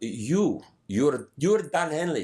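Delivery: put-on high woman's voice, Eastern European accent. Retelling a woman's words to a friend at a burger place, in an Eastern European accent. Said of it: "with some Eastern European accent".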